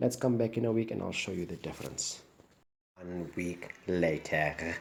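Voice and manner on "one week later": put-on Italian accent. Narrating a video, copying an accent other creators use: put-on Italian accent. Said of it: "I try to do that uh, Italian accent that the guys are using nowadays in their videos".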